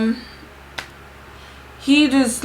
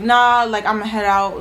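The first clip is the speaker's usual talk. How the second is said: ordinary talk, nothing marked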